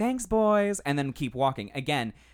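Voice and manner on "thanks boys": light, playful, very high and raised voice. Retelling a reply to men catcalling: imitating a playful tone. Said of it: "I'm gonna be playful".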